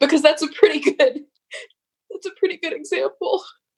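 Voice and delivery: high-pitched, teary, choked-up voice catching with tears. Responding to another speaker's comparison of teachers to triage: tearing up. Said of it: "I'm tearing up a little bit".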